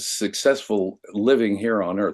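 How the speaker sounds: normal talking voice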